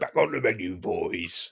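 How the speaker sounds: orc voice, slow. Discussing vocal range and character voices, using a Peter Jackson's orcs voice. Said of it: "sound like Peter Jackson's orcs".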